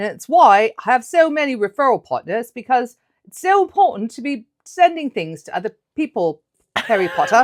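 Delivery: clumsy, overplayed put-on British accent. Joking about keeping it up for the whole podcast, in a put-on British accent. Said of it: "I could do the rest of the podcast like this".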